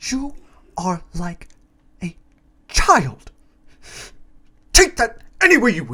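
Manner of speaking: put-on unhinged king voice, high and swooping. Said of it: "He talks like this".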